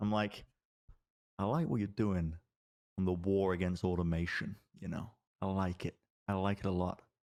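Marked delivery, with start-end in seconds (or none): 1.4-7.0 voice lowered to a hush. Retelling bringing someone in close to talk: lowered, hushed voice. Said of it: "I'm gonna sort of lower my voice, hush".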